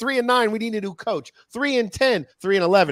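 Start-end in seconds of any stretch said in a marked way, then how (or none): 0.5-1.3 alarmed, panicked outcry. Mocking what football fans will say as the losses pile up: imitating panicking Jaguars fans. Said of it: "Jaguars fans are gonna be like".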